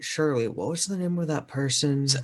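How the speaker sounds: whispering. Recounting asking Shirley for someone's name, retelling a whisper. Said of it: "I uh whispered to Shirley".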